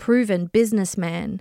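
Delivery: ordinary delivery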